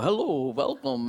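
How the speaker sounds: loud, hearty, hale farmhand-style voice. Retelling how the nuns greeted visitors: imitating hearty nuns' voices. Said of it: "their voices were, like, really hearty".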